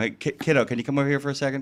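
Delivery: put-on really fast delivery. Showing how the nickname kiddo gets said: imitating a really quick delivery. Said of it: "It's really quick".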